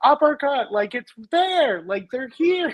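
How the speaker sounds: acted-out, high, excited yelling. Retelling yelling at a fight on tv: imitating himself yelling at the tv. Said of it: "I yell at the T V and I'll be like".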